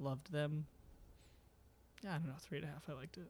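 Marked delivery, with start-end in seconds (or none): 2.1-3.3 defeated, much quieter. Giving a film a 3.5 rating, defeated. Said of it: "You sound so defeated".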